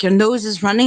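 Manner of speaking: normal talking voice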